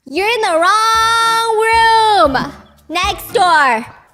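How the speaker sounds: put-on high, very slow yell, "wrong" stretched out. Retelling what men at an event yelled at a woman: imitating men yelling. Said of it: "standing up to scream back at her".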